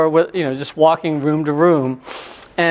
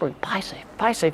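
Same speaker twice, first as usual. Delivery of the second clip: soft, breathy whisper under the breath; 4 semitones higher, 10 dB quieter than usual. Recounting a moment with a colleague, repeating his phrase to themself, whispering. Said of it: "I was whispering".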